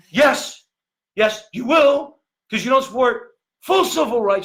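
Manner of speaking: each word forced out high and loud. Mocking a politician's speech, struggling on every word: bad Beto O'Rourke impersonation. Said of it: "that's a bad impersonation".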